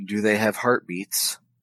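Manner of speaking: muttered under the breath. In a role-play, a character asks about the family joining them, under the breath. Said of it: "In sort of a under my breath way".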